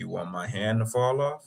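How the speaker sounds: low, smooth, sexy, seductive voice. Retelling a romantic movie scene, the speaker quotes the actor, imitating a low sexy voice. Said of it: "he got that low, you know, kind of sexy voice".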